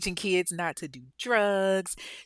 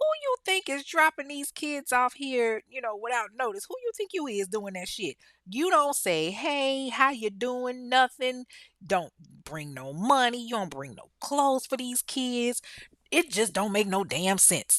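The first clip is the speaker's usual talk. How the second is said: put-on annoyed, scolding old-school grandmother voice; 4 semitones higher than usual. Retelling how the grandmother scolded him for dropping the kids off: imitating an annoyed grandmother scolding. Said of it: "she ain't like that shit at all. Like, she was like".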